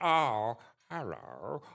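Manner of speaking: loud, animated, sing-song puppet voice with big swoops. Recalling how the original puppet voice went: original Zippy voice. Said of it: "he did the original Zippy voice".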